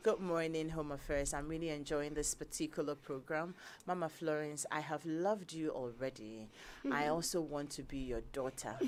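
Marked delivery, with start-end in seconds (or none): none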